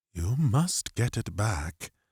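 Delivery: low, shaky, quiet voice, trembling with horror. A man stares at Nathan in horror, then finally speaks in a low, shaky voice. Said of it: "he said in a low, shaky voice".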